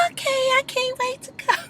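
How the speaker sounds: reality-star voice pitched very high. Recapping a reality show scene, doing an impression of Portia. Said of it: "That was my one impression I'm doing today".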